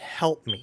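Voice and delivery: very hushed whisper, barely audible. An unseen someone calls out to the players, in a very hushed voice. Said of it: "in a very hushed voice someone go".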